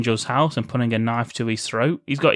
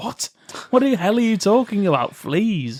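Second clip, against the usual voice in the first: put-on exasperated outburst, higher pitch; 9 semitones higher than usual. Retelling a film scene as Jack, confused: mock emotional outburst. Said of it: "Sorry, I got emotional there".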